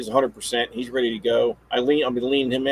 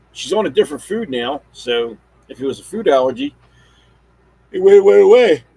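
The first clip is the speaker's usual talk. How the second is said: yawning speech, louder and higher; 3 semitones higher, 8 dB louder than usual. Updating listeners about a dog's food allergy while tired: yawning. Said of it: "I'm yelling, yawning".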